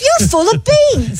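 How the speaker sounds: light English accent. Saying a british phrase after being asked: english accent. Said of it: "will you say it in an English accent?".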